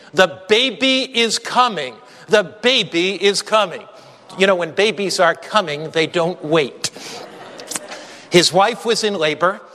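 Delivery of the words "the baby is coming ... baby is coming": ordinary delivery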